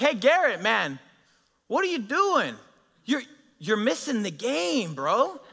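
play-acted, high, swooping shouted call. Retelling how the youth program director called out during a party: imitating Dom yelling. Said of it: "he yells out to me".

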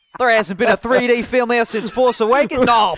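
Australian accent impression.

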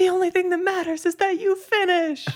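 shrill, very high, put-on encouraging cheering shout. Retelling what a six-year-old girl yelled at everyone, retelling an encouraging yell. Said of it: "And yelling".

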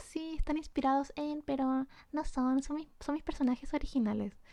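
put-on, overly friendly politeness. Retelling a reply to a lady at an illustration fair: retelling a put-on friendly reply. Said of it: "como haciéndome la simpática".

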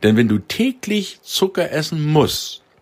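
musst stressed, lifted high and hard.

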